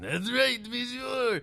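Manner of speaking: put-on French accent, very high-pitched voice. Retelling how the candlestick actor talked in the play: imitating a french accent. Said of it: "He talked like this the whole time".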